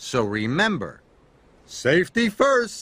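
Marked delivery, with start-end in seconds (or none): 1.7-2.8 proud, much higher, louder. After a warning about the muddy site, someone replies proudly. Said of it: "said Byron proudly".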